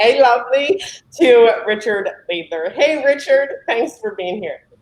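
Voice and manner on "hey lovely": put-on British accent. Asking the audience to greet the next speaker: put-on british accent.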